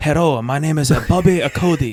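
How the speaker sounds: put-on broad Scottish accent, laid on thick. Speaker imitates a man from Connecticut, in a thick Scottish accent. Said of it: "like a thick, like Scottish accent where he's like".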